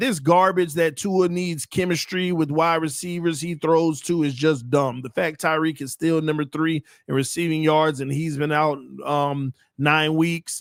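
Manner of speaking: ordinary talk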